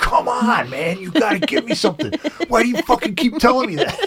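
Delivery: very high, fed-up, angry, exasperated outburst. Retelling pleading with spiritual guides for answers, acting out getting mad. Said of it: "Get so mad".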